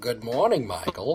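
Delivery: soft, quiet computer AI voice. [name], challenged to impersonate the Knight Rider car, greets Michael: KITT impression. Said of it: "do an accurate impression of Kit".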